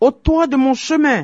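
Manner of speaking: very high, shrill, high-pitched yell. A young man on his way to a wedding feast meets a giant snake, shouted. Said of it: "cria le jeune homme".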